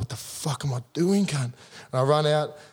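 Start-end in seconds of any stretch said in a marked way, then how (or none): 0.0-1.4 talking through tears, tearful outburst. Retelling running out for the first game, imitating own past crying. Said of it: "I'm crying up".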